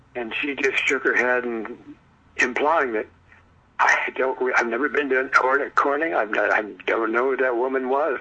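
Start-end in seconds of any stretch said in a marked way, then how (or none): none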